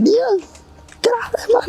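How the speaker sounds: put-on very high, squeaky voice in a Welsh accent.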